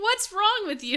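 acted, laughing, scolding mom voice. Retelling how mom would answer a call for a hug: imitating mom, laughing while scolding. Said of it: "that is exactly the way she would say that, while laughing".

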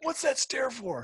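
very high, angry, screamed yell. Retelling how the opponent reacted to a stare down: imitating Joe screaming. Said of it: "he's screaming at me".

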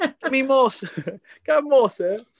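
acted orphan-boy voice. Asked where they're from, showing off their impressions, in a poor Oliver impression. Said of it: "I sound like I'm a really poor Oliver".

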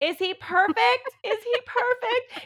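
acted yelling. Retelling a birth, imitating own past yell to Joe: retelling a yell. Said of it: "I just yelled to Joe".

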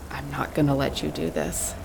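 spoken quietly. In a scene, coming face to face with a man near the water: said quietly. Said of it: "say quietly".

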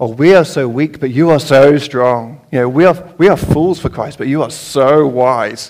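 very sarcastic, sardonic, tongue-in-cheek tone. Reading a scripture passage aloud in the tone the reader hears: sarcastic. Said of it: "he was being really sarcastic with them. I like to read it in this tone".

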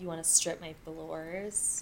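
put-on soft, sultry, seductive voice. Quoting a show character's line, in a put-on sexy voice. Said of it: "they're definitely trying to be sexy about it".

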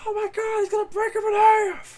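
high, loud, freaked-out announcer yell. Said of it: "J R freaking out".

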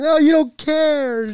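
very high, very slow fake crying. Retelling messing around with her after her warning: pretend crying. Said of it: "and I acted like I was crying".

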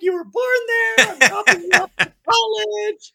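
weepy, tearful crying voice pitched way up. Retelling a drive to college, imitating mother crying. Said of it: "She starts crying as we're driving".

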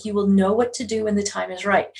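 ordinary delivery

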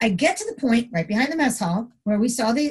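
ordinary delivery

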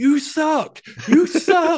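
very high-pitched, very slow, drawn-out shout. Retelling shouting at a heel during the main event, retelling shouting at someone. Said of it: "I could just see myself just shouting at him".

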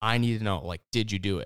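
put-on frantic, panicked woman's voice. Retelling a tv scene where a mother questions her son: imitating a frantic mother. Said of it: "you could tell she's all frantic".

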